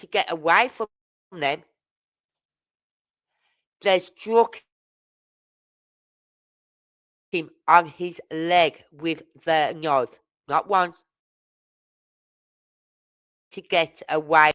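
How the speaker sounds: very angry. Telling how they struck him, and so mad about it that you apologize afterwards, really mad. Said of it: "I'm so mad about this".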